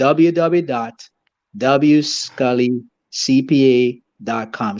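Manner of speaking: very slow, robotic monotone. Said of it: "I sound very monotone now. Like a robot".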